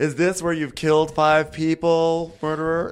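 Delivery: high, loud mock yelling at full volume.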